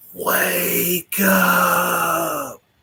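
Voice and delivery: restrained, imitated full-lung scream, rallying-cry style. Retelling a movie ending where Laurence Fishburne screams in the courtyard: imitating Laurence Fishburne screaming. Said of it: "he's just screaming at the top of his lungs".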